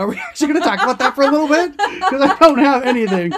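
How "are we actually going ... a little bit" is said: high-pitched, loud, fast incredulous disbelief. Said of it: "I was like".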